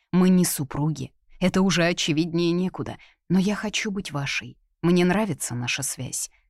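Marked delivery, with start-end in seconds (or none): none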